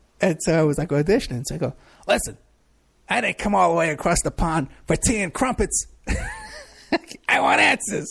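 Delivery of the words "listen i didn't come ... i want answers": hammed-up, swooping, tough put-on New York accent. Auditioning and hamming it up for a man, in a put-on New York accent. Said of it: "I was putting on my New York accent".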